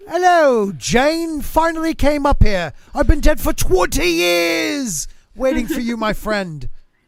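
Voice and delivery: put-on posh British accent. Imagining how everyone talks in heaven: proper london accent. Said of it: "a very London, like, proper".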